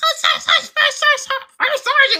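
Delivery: play-acted, very high shouted yelling. Retelling boot camp, answering the army staff before meals: imitating a yell. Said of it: "even to eat, we had to yell".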